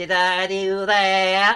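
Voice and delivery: heavily exaggerated, super nerdy voice. Demonstrating their nerdiest voice, a Steve Urkel voice. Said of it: "it's kind of an Irk Steve Urkel voice".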